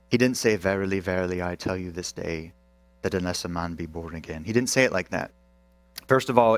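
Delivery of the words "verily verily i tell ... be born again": low, soft, droning British monotone, no lift. Mocking how movies portray Jesus saying the verse, in monotone British accent. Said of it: "in a monotone voice in a British accent".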